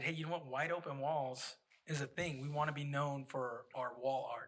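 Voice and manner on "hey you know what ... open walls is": usual speaking voice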